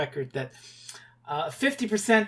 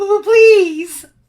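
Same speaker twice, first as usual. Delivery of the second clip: very high, loud, stuttering impression voice. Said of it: "this Roger Rabbit impression I'm doing for your voice".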